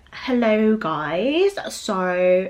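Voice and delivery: clumsy put-on British accent, still American, drawn-out so. Mocking someone's attempt at a British accent, doing a bad fake British accent. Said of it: "she always does like this British accent".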